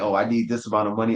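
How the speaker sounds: ordinary talk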